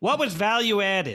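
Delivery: put-on Long Island accent. An interviewer imagines their mother calling with a question, strong Long Island accent. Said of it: "in the most Long Island accent".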